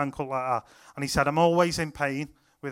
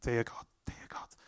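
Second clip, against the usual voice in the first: soft, very hushed whisper, close to ear; 5 semitones lower, 12 dB quieter than usual. Retelling whispering a prayer in a lad's ear: imitating a whisper. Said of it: "I whispered in his ear".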